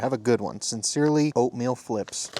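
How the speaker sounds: ordinary talk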